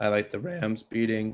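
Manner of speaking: voice breaking and cracking mid-phrase. Talking about NFL teams, speaking with voice cracking. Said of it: "voice crack".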